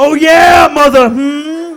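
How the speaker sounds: bad, booming, very slow voice, stretched "hmm". Voicing a grape Kool-Aid Man bursting through a wall: worst Samuel Jackson impression. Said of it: "That's my worst Samuel Jackson impression ever".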